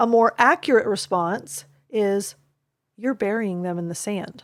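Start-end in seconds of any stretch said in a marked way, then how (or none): 3.0-4.4 hushed, quiet, soft, solemn tone. Showing how to reflect back to a quiet, solemn child, quiet solemn voice. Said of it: "The child is quiet and solemn".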